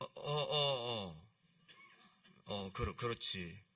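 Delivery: flustered, slow, stammering hesitation. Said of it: "잠깐 머뭇거리다가".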